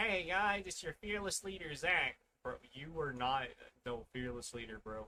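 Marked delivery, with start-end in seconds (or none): 0.0-2.2 squeaky, high-pitched little hype-host voice. Mocking a video intro someone always opens with: mocking squeaky voice imitating Zach. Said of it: "some guy over here with some squeaky voice".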